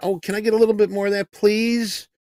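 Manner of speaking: mock, high, sweet, very nice courteous customer voice. Retelling how to order at Chipotle: imitating a real nice, polite customer. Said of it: "you act real nice, real polite".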